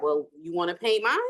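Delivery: ordinary delivery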